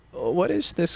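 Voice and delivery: put-on old man voice. Voicing a kid character who is given an old man voice. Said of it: "I gave the kid a, an old guy voice".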